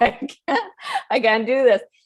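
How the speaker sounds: tearful, broken-down, high, loud sobbing cry. Retelling collapsing in an office, saying own past words: retelling own crying.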